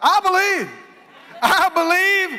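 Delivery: high, loud, desperate hollering cry.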